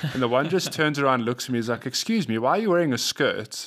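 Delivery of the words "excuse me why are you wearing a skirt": acted-out innocent, curious young child voice. Retelling what a kid asked while waiting at an obstacle: imitating a kid asking innocently. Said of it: "so innocently".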